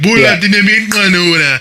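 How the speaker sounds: put-on Ethiopian-accented speech. Retelling what the doctor said: imitating a strong Ethiopian accent. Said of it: "his accent was so strong".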